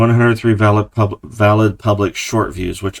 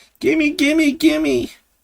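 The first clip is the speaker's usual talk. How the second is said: very high, whining, begging tone. Joking about begging for channel money: mock whiny begging. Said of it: "a whiny little bitch about it".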